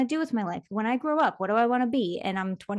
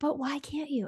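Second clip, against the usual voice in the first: soft, high, barely-there half-whisper; 5 semitones higher, 6 dB quieter than usual. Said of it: "and so it was so quiet".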